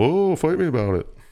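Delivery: over-the-top fake Irish accent, squeaked very high. Doing the same impression he does for everybody, now Irish people: exaggerated Irish accent impression. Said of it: "That's the same impression he does for literally everybody".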